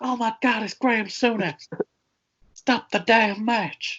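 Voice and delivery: shrill ringside announcer voice, pitched very high. Imitating a wrestling commentator reacting to a chair attack: J R impression. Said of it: "That's my J R impression".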